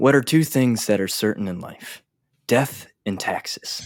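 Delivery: whispered promo-style announcer voice. Redoing a line from an earlier promo, whispered promo voice. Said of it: "so basically I just whisper when I talk".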